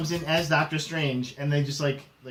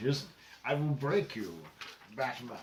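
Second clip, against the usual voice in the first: put-on Scottish-accented voice, lower and quieter; 5 semitones lower, 10 dB quieter than usual. Giving a co-host a hint with a Sean Connery impression. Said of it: "this is my main impression".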